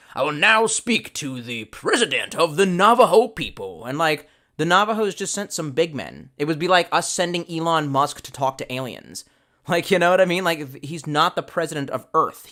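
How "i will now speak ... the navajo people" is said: put-on Southern accent. Retelling a general's meeting with the Navajo, speaking as General Kearney, southern accent. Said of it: "I gotta do a southern accent".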